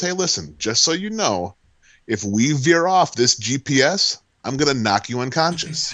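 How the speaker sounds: imitated calm, positive tone. Retelling a warning to a driver: imitating own calm threat. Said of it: "I looked at him very calm, very positively".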